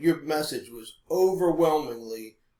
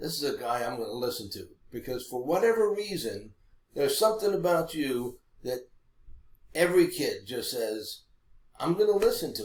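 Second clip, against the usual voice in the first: normal talking voice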